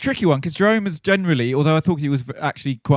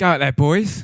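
put-on Scottish accent. Saying what the Scottish man would tell the boys, in a Scottish accent. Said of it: "He's Scottish".

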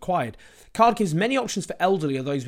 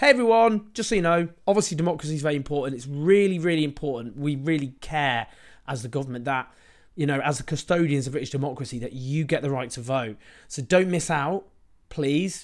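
ordinary delivery

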